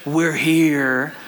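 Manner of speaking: very low, eerie, creepy voice, stretched out. Retelling what the guide said once the boat arrived: guide's creepy voice. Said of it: "the guide in his creepy voice says".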